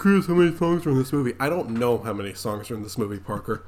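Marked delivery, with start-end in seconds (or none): 0.0-1.3 high, put-on, sneering, taunting tone. Quoting another person's question back at him, in a mocking tone. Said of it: "Like how you said it in a mocking tone".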